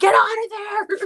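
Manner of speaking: very high, loud shriek, stretched long. Retelling how the other speaker reacts: imitating someone screaming. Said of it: "And you're screaming".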